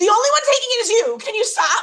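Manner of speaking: put-on, increasingly irritated, fed-up, annoyed tone. Retelling how Kate reacted to a man who kept passing by, imitating Kate being annoyed. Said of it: "she's like getting so annoyed".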